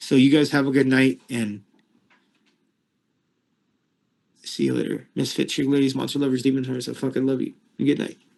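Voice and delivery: hoarse voice giving out. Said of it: "my voice is going".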